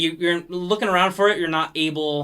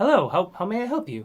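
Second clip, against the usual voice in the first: put-on older elvish woman character voice. Voicing an older elvish woman greeting a player: older elvish woman voice. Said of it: "an older elvish woman say".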